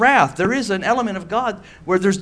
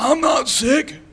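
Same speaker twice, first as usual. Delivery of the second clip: put-on stuffy nasal voice, much higher; 6 semitones higher than usual. Retelling what a man with a fever answered the speaker, imitating a nasally sick voice. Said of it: "just all nasally and had a fever".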